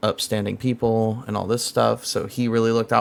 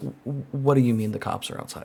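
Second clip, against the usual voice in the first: acted, groggy, just-woken, stumbling half-asleep voice; 2 semitones higher, 5 dB quieter than usual. Retelling waking up to hear the cops are outside: imitating being half asleep. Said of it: "half asleep".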